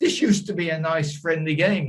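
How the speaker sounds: high-pitched, fuming, very angry outburst. Retelling what a poker opponent said after losing a hand, mock-angry voice. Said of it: "in a very angry voice".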